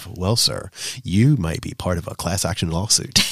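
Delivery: put-on businesslike, formal voice. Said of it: "It sounds very businesslike".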